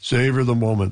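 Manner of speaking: deep-voiced delivery. Retelling a phone call from Brian Mulroney: Brian Mulroney's deep voice. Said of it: "perhaps imagine his deep voice".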